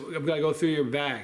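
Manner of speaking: normal talking voice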